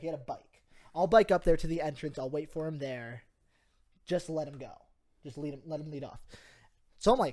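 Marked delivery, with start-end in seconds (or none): none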